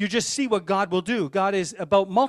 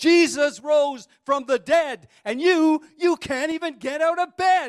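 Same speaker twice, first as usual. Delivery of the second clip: put-on loud raised voice, pitched up; 7 semitones higher, 4 dB louder than usual. Retelling how a friend stood over a sleeping man and spoke: retelling a loud line. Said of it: "in a loud voice".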